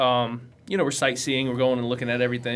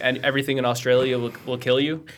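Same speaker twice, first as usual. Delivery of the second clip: ordinary talk, nothing marked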